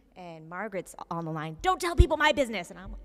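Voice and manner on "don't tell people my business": shrill, loud, mock upset screaming. Retelling a phone call where Margaret screams: imitating Margaret screaming. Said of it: "they can hear Margaret screaming a-, at me from the phone".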